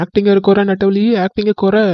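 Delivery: ordinary talk, nothing marked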